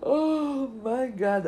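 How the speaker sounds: loud, high exclamation stretched by a yawn. Fifteen minutes into a late podcast recording before midnight, yawning. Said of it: "I am yawning".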